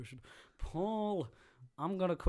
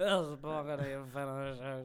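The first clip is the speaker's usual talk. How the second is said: imitated, put-on drunk voice; 2 semitones lower than usual. Mimicking the other speaker's congratulations: imitating a put-on drunk voice. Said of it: "you suddenly sound incredibly pissed".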